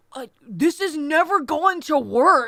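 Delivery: surfer dude voice. Making fun of a movie scene, imitating Deuce: Deuce surfer voice. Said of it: "that surfer ver-, voice".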